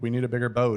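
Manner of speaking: normal talking voice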